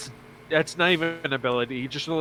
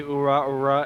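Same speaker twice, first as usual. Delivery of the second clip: ordinary talk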